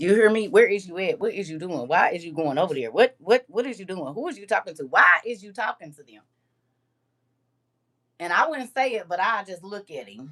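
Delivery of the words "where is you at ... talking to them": put-on possessive nagging, louder. Retelling own past questions to the first man followed around: imitating possessive questioning. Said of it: "possessive over".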